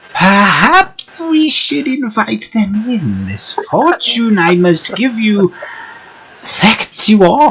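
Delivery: put-on very high, dry, crackly old crone voice. Voicing a woman who gives the group a fortune, her voice crackling like dry weeds. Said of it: "Her voice crackles like dry weeds".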